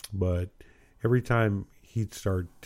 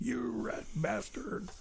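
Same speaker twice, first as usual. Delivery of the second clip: put-on annoyed man voice, higher and quieter; 13 semitones higher, 11 dB quieter than usual. Picturing an annoyed acquaintance driving home after a joke: Sam voice. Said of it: "drifting into the, into the, uh, Sam voice again".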